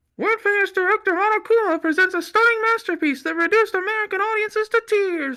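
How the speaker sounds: muffled through hands. Lacking a buzzer speaker, the host announces the screening, talking through hands. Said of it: "I'm gonna try to talk through my hands".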